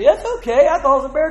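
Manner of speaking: high, loud laughing delivery.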